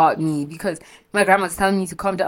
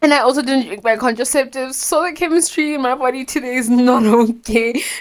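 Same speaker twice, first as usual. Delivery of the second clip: high, loud, tearful crying through the words; 7 semitones higher, 5 dB louder than usual. Explaining to listeners why she is upset today, the speaker talks while crying. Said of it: "I'm crying because I'm having an episode".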